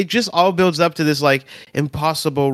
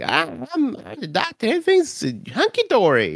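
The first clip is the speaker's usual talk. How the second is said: put-on carefree hero voice, higher pitched; 9 semitones higher than usual. Describing the Doctor getting too comfortable: impression of the Doctor. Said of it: "Good impression".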